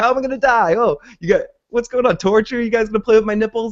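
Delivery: acted thrilled, eager voice, pitched very high. Retelling a character asking how he will be killed: imitating excited questioning. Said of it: "he's excited about it".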